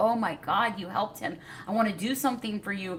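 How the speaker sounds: almost crying voice. Retelling what his wife said at the aid station: imitating someone almost in tears. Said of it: "almost in tears".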